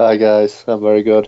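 subdued, muted, a bit down, low-key. Greeting the hosts over the phone line, sounding a bit down. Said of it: "You sound a little bit down".

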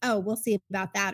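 ordinary talk

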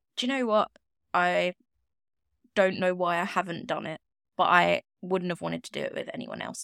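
ordinary talk, nothing marked

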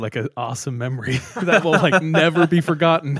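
high, loud laughing through the words.

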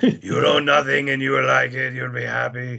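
very slow, rough-edged, creaky, each word drawn out. Doing a quick impression of Klaus Schwab: Klaus Schwab impression. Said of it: "you got a good little Klaus Schwab, impersonation".

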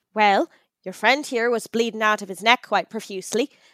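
put-on blend of Irish and British accent. In a roleplay scene, a stranger explains why they got in the van, Irish-British mixed accent. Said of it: "It's a mix of Irish and British".

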